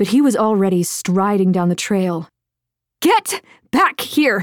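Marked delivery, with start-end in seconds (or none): 3.0-4.4 furious, high-pitched, angry shout. Narrator reading a story, a woman shouting after a man striding away. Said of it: "she shouted".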